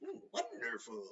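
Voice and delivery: soft, weird, small voice. Recalling how they said a word in an earlier video: weird little Yoda voice. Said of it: "I said it in like a weird little way, like Yoda".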